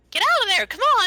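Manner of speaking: very high-pitched, shrill, loud voice. Demonstrating how she should sound, switching to a high-pitched voice. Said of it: "like high pitch".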